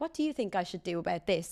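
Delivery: plain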